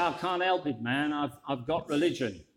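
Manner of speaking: put-on, drawling American accent. Telling a joke, voicing the American's reply to the vicar in an American drawl. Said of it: "in that kind of American drawl".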